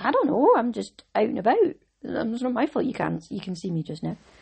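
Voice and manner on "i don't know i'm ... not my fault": sing-song talking character voice. Talking about the moon up in the daytime, speaking as the moon: talking moon voice. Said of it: "the moon talks, and that's its voice".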